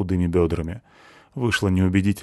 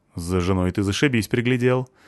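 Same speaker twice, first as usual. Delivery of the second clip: plain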